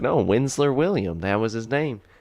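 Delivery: put-on southern US accent. Retelling a man correcting a woman about his name, in a southern accent. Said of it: "You have a you have a southern accent too".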